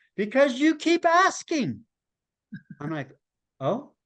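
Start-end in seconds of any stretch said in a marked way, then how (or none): 0.2-1.8 high, yelled voice. Retelling an argument, quoting how she yelled back at the speaker, retelling her yell. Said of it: "she yells back at me".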